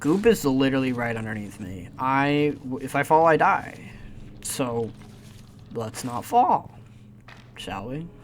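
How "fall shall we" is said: voice cracking and breaking mid-line. A gamer climbing above deadly goop comments on not falling, voice cracking. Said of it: "Holy voice crack".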